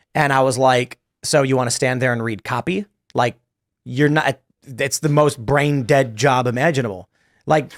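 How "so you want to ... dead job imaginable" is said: usual speaking voice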